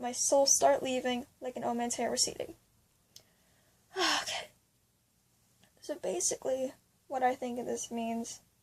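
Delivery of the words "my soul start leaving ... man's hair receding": normal talking voice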